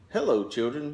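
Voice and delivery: sweet-sounding voice. Reading a story, someone arriving greets the children in a sweet voice. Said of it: "someone in a sweet voice".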